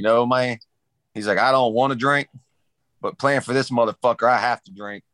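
imitated heavy Southern drawl. Retelling what a man who plays for them told him, in a thick Southern drawl. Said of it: "he has his thick ass Southern drawl".

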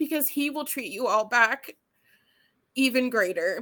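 crying while talking. Thanking a traded player for being part of a hockey journey, crying while talking. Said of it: "and I'm crying again".

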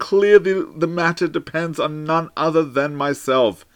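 usual speaking voice

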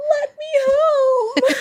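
mock very high yell with home stretched long. Recalling driving around the village with the roads home closed, retelling a shout. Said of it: "driving around my little village shouting like".

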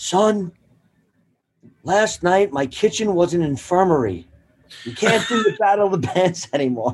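put-on poor old man voice. Retelling a phone call from an old man at the venue: imitating an old man. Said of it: "just an old, terrible man calls me up and he's like".

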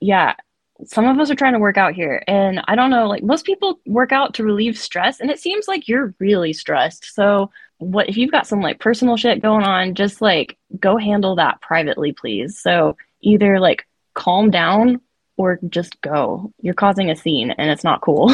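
ordinary delivery

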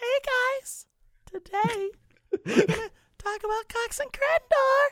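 fake ASMR voice, pitched way up, very high. Podcast hosts agree to talk in their ASMR voices: fake ASMR voice. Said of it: "in our ASMR voices".

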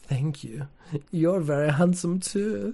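soft, seductive, sexy evil-scientist voice. Reading fanfic aloud, the narrator answers him: sexy evil-scientist voice. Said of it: "doing the sexy talk like an evil scientist".

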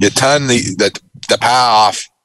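New England accent, dropped r's. Speaker demonstrating different accents a caller on the phone might have, new england accent, no r's. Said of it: "the New England accent where you don't use the R's".

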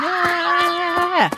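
high, scared child-like mock scream. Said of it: "He's going".

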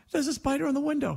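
put-on high, frightened child voice.

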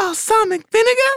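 very high-pitched puppet-style monster voice. Acting out Elmo doing a recipe, in an Elmo impression. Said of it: "I love your impression of Elmo".

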